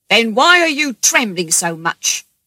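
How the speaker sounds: loud, angry, forceful voice. A man with a gun questions John, who claims he has no money; asking angrily. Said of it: "the man with the gun asked angrily".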